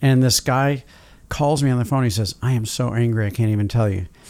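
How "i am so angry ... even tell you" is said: ordinary talk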